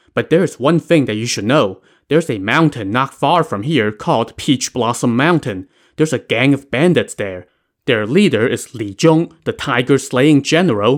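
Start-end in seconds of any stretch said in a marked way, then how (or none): none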